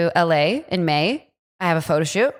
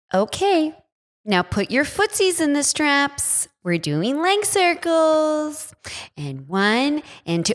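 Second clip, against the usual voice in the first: put-on cooing, high, slow baby talk; 9 semitones higher than usual. Retelling a Pilates class, imitating the instructor: imitating a baby voice. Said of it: "the instructor talked in baby voice".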